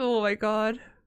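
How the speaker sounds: talking while laughing uncontrollably. Apologizing to viewers while unable to stop: laughing while talking. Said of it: "I just cannot stop laughing".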